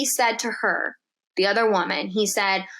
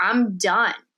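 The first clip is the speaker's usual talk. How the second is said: put-on crying, tearful voice. Retelling the moment a friend started crying: imitating a friend crying. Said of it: "that's when she started crying".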